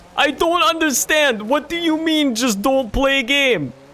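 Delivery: loose put-on Russian accent, very high, slow. Voicing a person who would unironically type that, in a vaguely russian put-on accent. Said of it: "Was that supposed to be a Russian accent?".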